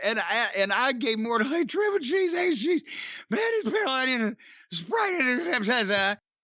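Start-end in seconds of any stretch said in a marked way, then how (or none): 1.5-6.2 very high, garbled speech through helpless laughter. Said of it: "laughing and slobbering all over myself and heaving".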